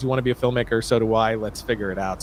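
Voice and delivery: ordinary talk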